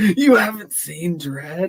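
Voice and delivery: put-on very high, drawn-out, sorrowful and disbelieving. Repeating the other speaker's question back to them: imitating someone sounding sad. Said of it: "You sounded so sad right there".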